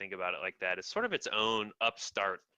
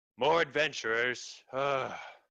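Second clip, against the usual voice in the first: put-on very old woman character voice, high-pitched; 5 semitones higher, 4 dB louder than usual. Voicing an old woman at a front desk greeting adventurers: voicing a very old woman. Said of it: "the very old woman looks up and says".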